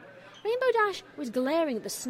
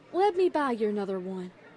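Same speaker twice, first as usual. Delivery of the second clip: ordinary delivery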